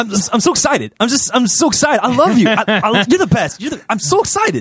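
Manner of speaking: fake, put-on over-excited voice. Teaching others a simple bit to do: put-on excited voice. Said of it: "I'll teach you how to do it. All you got to do is".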